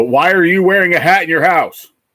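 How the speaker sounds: play-acted, high, outraged, indignant screaming shout. Recounting a troll's comment, imitating a troll screaming at the speaker. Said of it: "like screaming at me".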